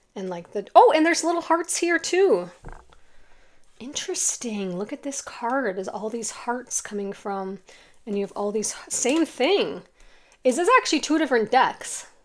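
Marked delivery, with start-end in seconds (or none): 10.5-12.1 excited, rushed yell, high-pitched and swooping. Comparing cards from two decks, excited yelling. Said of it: "I don't know why I'm yelling right now".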